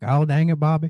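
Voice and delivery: put-on Southern accent. Asked on the spot to try one, speaker does a Hank Hill impression. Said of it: "Can you do a Hank Hill impression?".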